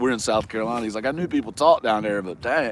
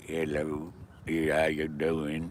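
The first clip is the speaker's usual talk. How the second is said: put-on low, hushed, ninety-year-old backwoods man's voice; 6 semitones lower, 8 dB quieter than usual. Speaker retells how Jeff answers telemarketer calls, imitating a ninety-year-old backwoods man. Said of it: "talks like some old man that's like you know ninety years old and from the backwoods".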